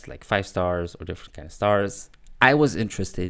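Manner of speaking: ordinary delivery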